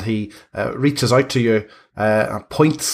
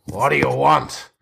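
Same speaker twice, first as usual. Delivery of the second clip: rough, snarled delivery; 4 semitones higher than usual. Narrator voicing an interrupted man answering you, snarling. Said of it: "he looks at you and snarls and says".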